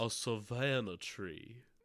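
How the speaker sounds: Southern accent of Savannah, Georgia. Repeating another speaker's phrase in a put-on Savannah, Georgia accent. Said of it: "That's my Savannah accent".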